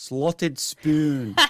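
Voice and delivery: put-on Scottish accent. Showing the one phrase that can be said in a Scottish accent. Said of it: "I can say one phrase in Scottish".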